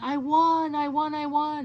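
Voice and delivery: very slow, high, stretched-out, drawn-out screaming. Telling about her ex-husband waking up, imitating her ex-husband screaming. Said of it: "he was screaming".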